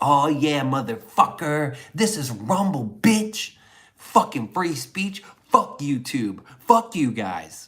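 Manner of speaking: mock pissed-off, furious ranting tirade. Retelling an angry message sent after being kicked out: retelling an angry rant. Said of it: "I was pissed".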